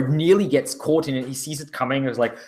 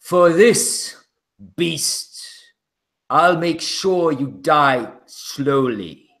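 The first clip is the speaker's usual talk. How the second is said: intimidating, threatening knight voice. In a role-play scene, the Lord looks down and speaks: deep booming voice. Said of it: "his fairly deep voice booming out".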